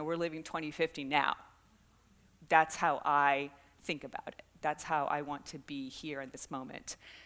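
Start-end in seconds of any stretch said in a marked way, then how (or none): none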